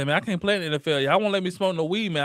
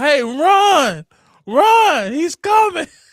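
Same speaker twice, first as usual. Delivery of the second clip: very high, very slow, drawn-out holler; 11 semitones higher, 9 dB louder than usual. Speaker describing linemen warning their quarterback, imitating linemen yelling. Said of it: "linemen yelling at their quarterback to run".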